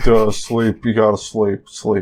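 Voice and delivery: mock flat emotionless monotone voice. Describing a show character who barely speaks, imitating his flat emotionless voice. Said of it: "this guy doesn't have emotions".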